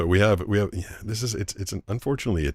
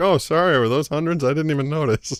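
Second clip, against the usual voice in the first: very high, loud, oblivious, careless feigned surprise; 10 semitones higher, 5 dB louder than usual. Teasing someone by acting out the guy at the strip club, mock-careless big spender. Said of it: "like the guy at the strip club that just keeps dropping hundreds".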